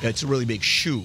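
TV host voice, saying "show" like "shoe". Opening the show with a big show, like Ed Sullivan: Ed Sullivan impression. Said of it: "Like Ed Sullivan".

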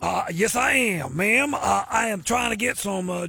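bad put-on Cajun man accent, low and creaky.

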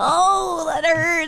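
high, pained moan. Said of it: "continued to moan and be like".

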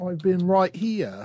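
poor, clumsy, fake Australian accent. Playing a role in a group bit, bad australian accent. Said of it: "that's not a good Australian".

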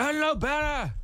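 put-on slurred words. Retelling what a man said, imitating drunk slurring. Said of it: "he's slurring his words real bad".

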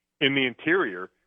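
plain

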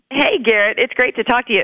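scratchy, hoarse, rough speaking voice. Greeting the interviewer the morning after an event: hoarse voice. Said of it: "Listen to how hoarse my".

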